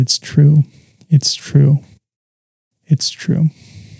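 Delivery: slow, put-on weeping, words pushed out through sobs, repeated. Retelling answering a hug at home as a child: retelling own weeping words. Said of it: "I just wept and said".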